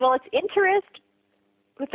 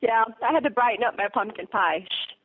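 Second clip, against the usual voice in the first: usual speaking voice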